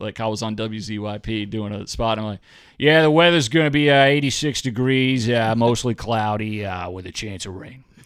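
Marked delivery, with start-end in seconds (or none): 2.8-7.8 loud, thick, laid-on put-on Boston accent. Retelling a radio weather spot still in the accent: put-on thick boston accent. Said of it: "it took me a week to shake".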